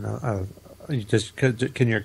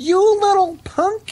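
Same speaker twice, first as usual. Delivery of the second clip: mock yell, higher and louder; 9 dB louder than usual. Imitating a best friend's mom yelling at rowdy kids: imitating a mom yelling. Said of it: "starts yelling".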